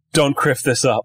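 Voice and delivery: voiced, conspiratorial stage whisper close to the ear. Voicing Sully at a player's shoulder during a cannon shot: whispering as Sully. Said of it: "you hear Sully whisper in your ear".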